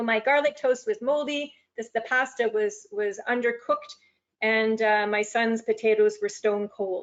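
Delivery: ordinary talk, nothing marked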